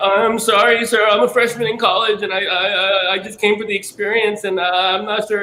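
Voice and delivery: mock crying, very high-pitched, stammering, tearful. Retelling apologizing to an audition associate while almost crying: retelling own past crying. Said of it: "I'm, like, crying".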